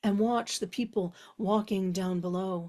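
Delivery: plain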